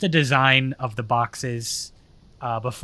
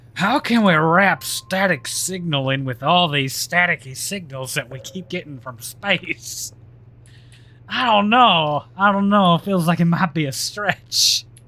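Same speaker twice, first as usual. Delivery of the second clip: goofy, put-on Southern US accent; 4 semitones higher than usual. Musing aloud about static signals from space, in a put-on southern accent. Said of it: "I keep doing the southern accent".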